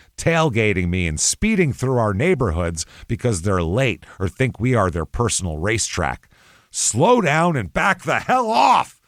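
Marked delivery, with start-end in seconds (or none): 6.7-8.9 full-on, high, drawn-out, acted-out yell. Reading out a complaint written with five exclamation points, yelled loudly. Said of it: "I had to yell it because it's five exclamation points".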